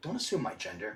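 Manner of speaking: totally earnest, dead serious delivery, no hint of joking. Retelling a reply to a store worker, retelling a line said real serious. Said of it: "'Cause I said it real serious".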